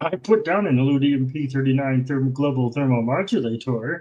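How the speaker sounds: old-school animated cartoon alien voice. Quoting a cartoon line to another speaker, in Marvin the Martian voice. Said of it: "That that's who you're doing".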